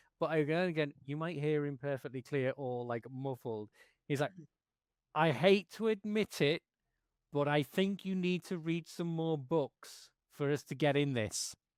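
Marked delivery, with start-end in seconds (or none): 5.2-11.6 effortful, straining, each word pushed out slowly. Voicing a character underwater calling to a companion: straining shout at top of voice.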